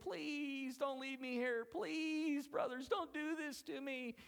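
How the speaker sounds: very high, hollered, sobbing, pleading, acted out. Retelling the story of a brother left in a pit: acting out a crying plea. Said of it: "he's crying, he's hollering".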